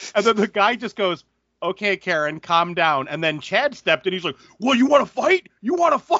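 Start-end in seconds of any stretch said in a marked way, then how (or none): 4.6-6.2 put-on, shrill, very high screaming. Telling a story about a line at a counter, speaker acts out a man, retelling a scream. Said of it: "just started screaming at the guy".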